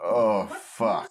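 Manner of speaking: mumbled under one's breath. Voicing an elven character in a role-playing game, muttered under breath. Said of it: "Under my breath".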